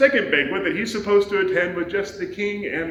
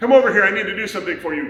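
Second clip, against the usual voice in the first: put-on grumbling voice, louder; 5 dB louder than usual. Retelling Haman calling Mordecai over against his will: grumbling Haman voice. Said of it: "grumble, grumble, grumble".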